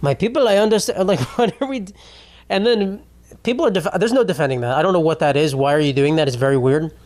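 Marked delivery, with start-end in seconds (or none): 0.0-1.1 put-on Ugandan accent. Mocking a man who talks in interviews in Africa, in a weird Ugandan accent. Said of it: "talking with like a fucking weird like Ugandan accent".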